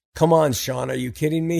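ordinary delivery

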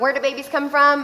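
normal talking voice

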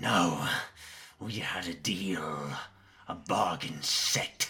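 very slow, loud, drawn-out, greedy grasping hag voice. Game master voicing the creature Meredith to the players, Meredith the hag voice. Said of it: "The hag, her long hair pulled back, her face contorted, and you can see blood still smeared from the skin she wore. Her arms... Her fingers have a fourth joint that stretches out, and she has long claws that stretch".

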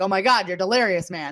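ordinary delivery

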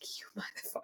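voiceless whisper.

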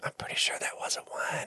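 very quiet, barely voiced whisper. Retelling a movie scene where someone whispers during communion: imitating a whisper. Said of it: "he whispers to the person next to him".

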